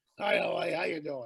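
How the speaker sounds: rough voice with gravel in the throat. Recalling the late Doctor Roger Lear's greeting, doing his gravelly Roger Lear impression. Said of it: "that that gravelly voice that he had".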